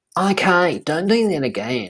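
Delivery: put-on high, drawn-out Australian accent. Retelling what a man said to them before they walked off: australian accent. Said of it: "I thought I was talking to an Australian then".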